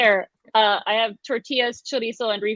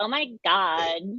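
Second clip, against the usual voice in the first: put-on Californian valley girl accent. Talking about the accent people use to pretend to be american: valley girl accent. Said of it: "valley accent? Like".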